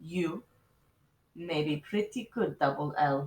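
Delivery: unhurried, gentle, soft, grave and serious. After the incident, a woman speaks a few words to Lulu; slow, soft, serious voice. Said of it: "She spoke in a slow and soft and most serious voice".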